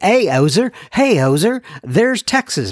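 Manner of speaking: faltering put-on Canadian accent. Recalling how people greeted him at meetings, he puts on a canadian accent. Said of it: "I'm losing it with my canadian accent".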